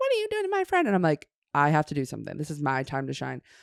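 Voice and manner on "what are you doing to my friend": mock furious, very high angry shriek. Retelling a friend confronting a girl who grabbed their friend, retelling a friend screaming. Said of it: "she's screaming at this girl".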